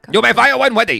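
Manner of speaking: put-on Chinese accent. Teasing a friend's accent, repeating the Star Wars line in a put-on Chinese accent. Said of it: "I thought you were doing like a Chinese accent".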